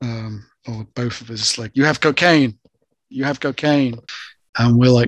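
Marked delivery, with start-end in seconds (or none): 1.7-4.0 insistent, hammering accusing tone, repeated. Retelling how a policeman uncle accused them: imitating someone shouting. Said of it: "He starts shouting at me".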